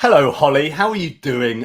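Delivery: refined Queen's English accent. Asked by the host to greet his wife Holly: Queen's English accent. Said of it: "in the best Queen's English?".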